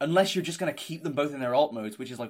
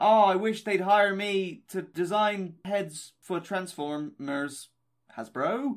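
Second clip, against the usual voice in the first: very slow, high, drawn-out called voice; 6 semitones higher than usual. Shouting a wish into a hole, hoping for a head-design job: shouting out a wish. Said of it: "let me shout into a Jeffrey hole".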